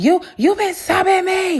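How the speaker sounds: put-on very high-pitched shrill shouting. Retelling how the other woman started yelling: imitating someone yelling. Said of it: "she starts yelling".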